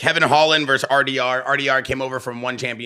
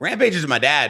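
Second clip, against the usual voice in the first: plain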